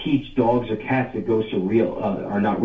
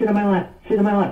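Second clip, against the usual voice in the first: put-on childlike voice, much higher, slower; 10 semitones higher than usual. Recounting a guy sitting at the table with the chaperone, child-like voice. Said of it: "in like a child-like voice".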